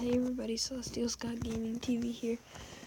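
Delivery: tired, groggy, half-whispered voice.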